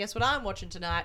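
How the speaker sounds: ordinary talk, nothing marked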